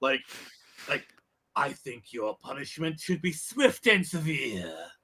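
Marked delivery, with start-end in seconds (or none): 1.6-4.7 villain voice with extra growl. Showing how Mark Hamill adds growl: growly Joker voice. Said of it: "how much growl he adds to the Joker voice".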